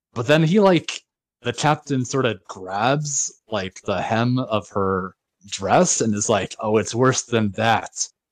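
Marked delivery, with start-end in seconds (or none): 6.6-8.1 put-on acidic tone. Retelling a scene where the captain grabs her dress hem and answers; mimicking an acidy tone. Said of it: "says in like this acidy tone of voice".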